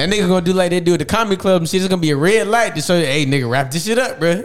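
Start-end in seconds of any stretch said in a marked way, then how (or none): none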